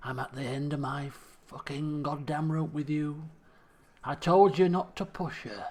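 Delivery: speaking through clenched teeth, jaw clenched. Narrator reads a man answering the lawman, through clenched teeth. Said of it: "he says through clenched teeth".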